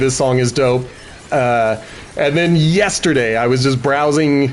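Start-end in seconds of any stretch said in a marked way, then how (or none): none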